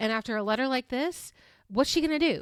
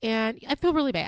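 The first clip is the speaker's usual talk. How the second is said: plain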